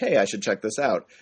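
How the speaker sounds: normal talking voice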